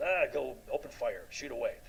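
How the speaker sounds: plain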